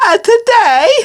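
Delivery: silly put-on voice. Opening a Would You Rather game episode: funny voice. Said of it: "I just made a funny voice".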